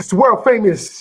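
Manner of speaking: put-on radio DJ intro-style announcer voice. Opening the show by calling it world famous, in Mister Magic's voice. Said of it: "I said it in my Mister Magic's voice".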